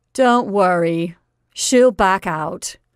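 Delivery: contemptuous, very clear. Marjorie speaks out of the group about Bernice, very clear and contemptuous. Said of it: "very clear and contemptuous".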